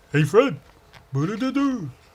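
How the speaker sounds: put-on animated cartoon voice, high and sing-song. Talking about the Flintstones and the Rubbles, in a put-on cartoon character voice. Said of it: "That's all I can do in his voice".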